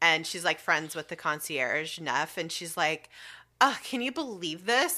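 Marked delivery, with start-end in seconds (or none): 3.6-5.0 mock indignant, utterly affronted, pitched-up, offended tone. Retelling her reaction to finding her room packed up: imitating someone totally offended. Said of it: "totally offended".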